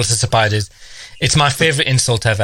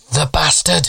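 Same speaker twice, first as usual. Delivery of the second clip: put-on small child's little piping voice; 3 semitones higher than usual. Retelling a story of a child at the back reacting. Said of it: "this little voice from the back went".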